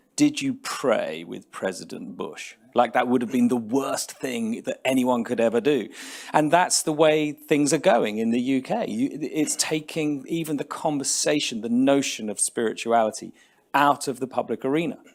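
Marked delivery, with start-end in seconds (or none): 0.2-2.6 scornful, sneering tone. Retelling a journalist's question in an interview: mock-sneering tone. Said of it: "he said to him in a sneering tone".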